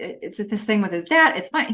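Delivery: ordinary delivery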